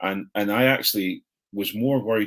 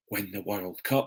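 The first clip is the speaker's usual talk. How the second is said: half-whispered, hushed, under the breath; 5 dB quieter than usual. Talking about the team's chances, half-whispered. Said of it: "he whispers it".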